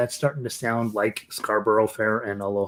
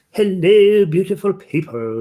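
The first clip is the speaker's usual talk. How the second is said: put-on British accent, very high and loud; 9 semitones higher, 8 dB louder than usual. Imitating a tin whistle player's video greeting: imitating a British accent. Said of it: "and with her British accent".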